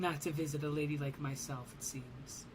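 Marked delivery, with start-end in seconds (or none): none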